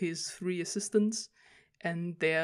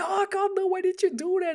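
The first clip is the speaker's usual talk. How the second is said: frantic, shrill, very high scream; 8 dB louder than usual. Retelling a manga scene where the assistant screams: imitating someone screaming. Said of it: "the assistant starts screaming".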